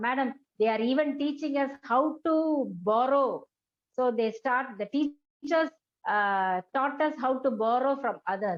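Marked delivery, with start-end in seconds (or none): none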